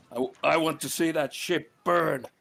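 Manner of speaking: furious in-character shout. Voicing a character who screams to sink the enemy ship: Eligos screaming. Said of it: "Eligos is screaming".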